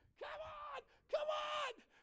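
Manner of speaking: play-acted screaming at very high pitch. Speaker retelling what they screamed at the girls: retelling a scream. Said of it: "I'm screaming".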